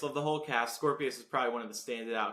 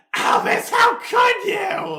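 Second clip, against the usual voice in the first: shrill, very high, loud, booming, drawn-out scream; 14 dB louder than usual. Imitating Scorpius yelling at Albus in the newer show: imitating Scorpius screaming. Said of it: "Too loud, too loud".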